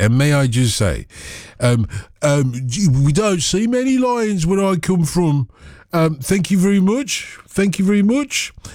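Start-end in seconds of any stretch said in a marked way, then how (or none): 2.6-8.5 high-pitched, bad attempt at a Brummie accent. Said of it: "it's not even a Brummie accent".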